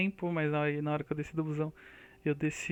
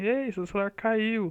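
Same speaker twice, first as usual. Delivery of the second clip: put-on high, called-out shout; 5 semitones higher, 4 dB louder than usual. Retelling how a man off the bus shouted that the phone fell, imitating his shout. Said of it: "gritou assim".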